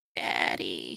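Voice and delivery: soft, faint, breathy whisper. Retelling a movie scene, voicing the little daughter, imitating a whispered call. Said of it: "she like whispers out like".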